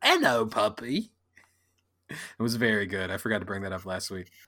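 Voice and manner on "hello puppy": put-on British accent. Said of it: "we were doing British accents".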